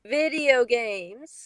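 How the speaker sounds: joking yet patronizing tone. Reading a character's line aloud: joking yet patronizing tone. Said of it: "she asked in a joking yet patronizing tone".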